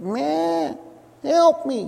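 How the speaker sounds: distressed, high bleating sheep voice. Telling of sheep stranded on a ledge, doing a bleating sheep impression. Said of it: "That's my sheep impression".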